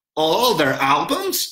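victorious, triumphant, winning tone. The narrator answers the gang's question at his street table, triumphant. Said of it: "I replied triumphantly".

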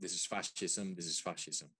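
normal talking voice

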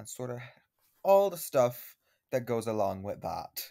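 mock contempt.

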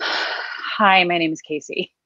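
breath out before speaking. The speaker demonstrates a common breathing mistake, breathing out before speaking. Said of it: "breathe out half of their fuel".

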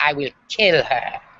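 slow, menacing, ambiguous, unreadable tone. Retelling their mother's remark to everybody about a waitress, imitating mom. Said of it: "I kind of have to do an imitation of my mom now".

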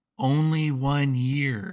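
whispering in a character voice. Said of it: "she's whispering to you".

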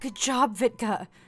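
very high-pitched speech, laughing with relief. Praising the harpy after her grenade toss, with a relieved laugh. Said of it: "said with a relieved laugh".

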